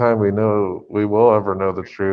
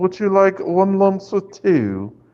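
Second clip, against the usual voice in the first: very high, badly done fake British accent; 12 semitones higher than usual. Playfully offering tea, in a horrible British accent. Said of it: "my British accent's horrible".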